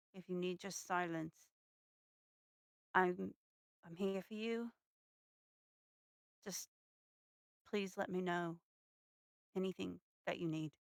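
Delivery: quiet murmur under the breath. Playing a character reassuring a friend so no one else hears: under the breath. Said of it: "under my breath so that, like, no one else can hear but us".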